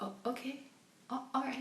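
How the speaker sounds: mock very quiet, agreeable, compliant tone. Mocking how Shepard accepts the child's explanation: imitating Shepard going along. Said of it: "Shepard's like".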